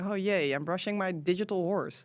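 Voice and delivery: fake cheer dripping with sarcasm. Mocking brushing a digital horse with a mouse, sarcastic mock-cheerful. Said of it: "my little, you know, sarcasm, like".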